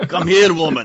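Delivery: put-on really dark, heavy Austrian accent. Voicing a game character in a dark Austrian voice: imitating Arnold Schwarzenegger. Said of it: "Like a really dark Austrian".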